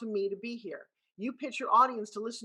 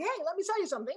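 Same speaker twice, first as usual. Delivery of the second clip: pitched-up, higher salesman sales-pitch voice; 8 semitones higher than usual. Mimicking someone doing a pitch for the speaker, higher sales-pitch voice. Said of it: "they go into this higher voice going".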